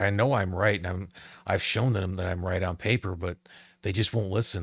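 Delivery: ordinary delivery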